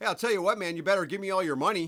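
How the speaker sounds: very high, very loud, pleasant friendly Canadian accent. Imagining being robbed in Canada: pleasant Canadian-accented mugger. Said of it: "if I were in Canada".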